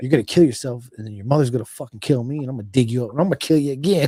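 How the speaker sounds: mock angry father voice, furious ranting. Retelling the dad's reaction to running from the cops: imitating an angry dad. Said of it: "My dad was super fucking pissed".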